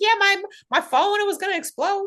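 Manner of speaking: horrible, very high-pitched voice, badly done. Retelling what a guest said after a show: horrible Gina Marie impression. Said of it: "That was a horrible impression".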